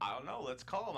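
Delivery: plain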